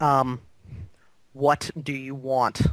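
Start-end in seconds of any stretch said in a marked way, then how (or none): 1.3-2.6 hollow, empty, unsettling voice. A game master voices a being addressing the players, in a disconcerting, empty voice. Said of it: "rather disconcerting, empty voice".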